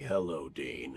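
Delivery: very deep voice kept soft. Misha demonstrating the voice he used for his role: Castiel voice. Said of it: "the my Castiel voice".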